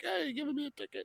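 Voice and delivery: mock very high, screaming shouted yell. Retelling a scene of someone screaming down from a high window: imitating someone screaming. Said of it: "he's up in a very high window screaming down".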